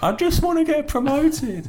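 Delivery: very high, tearful, slow, drawn-out sobbing. Retelling what a fan sitting on a club floor said: imitating someone crying. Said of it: "he's just sitting there crying his eyes out".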